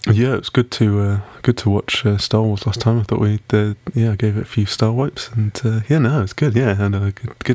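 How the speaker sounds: very low, deliberately deepened put-on voice. On a podcast, answering a co-host's greeting in a very low voice. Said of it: "very low of voice".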